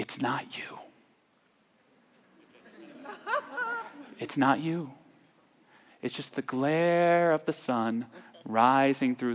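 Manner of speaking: hushed, soft half-whisper, barely there. Retelling what a woman half-whispered to the speaker: retelling her half-whisper. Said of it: "she whispers".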